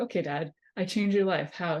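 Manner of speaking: usual speaking voice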